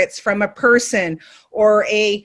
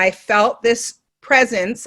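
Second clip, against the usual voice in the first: normal talking voice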